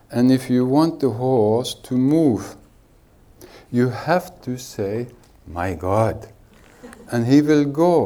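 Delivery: normal talking voice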